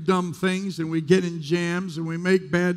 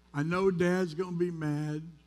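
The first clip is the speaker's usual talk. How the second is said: ordinary talk, nothing marked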